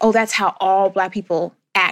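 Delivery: ordinary talk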